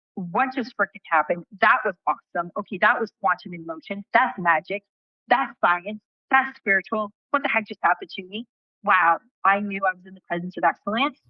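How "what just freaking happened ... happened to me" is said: ordinary talk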